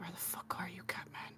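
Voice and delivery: mumbled under the breath. A player narrating their character's actions in a game, muttering under breath. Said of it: "I'm just going to mutter under my breath".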